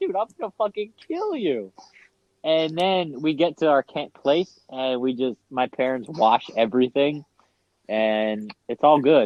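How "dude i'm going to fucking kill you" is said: mock angry flip-out, much higher, faster. Retelling finding a soaked pillow beside the brother, retelling flipping out. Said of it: "I flip out on him".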